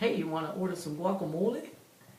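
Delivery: thick put-on Mexican accent. Retelling what a date said while ordering guacamole: a put-on mexican accent. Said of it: "he said it in such a fashion that it was, like, very Mexican".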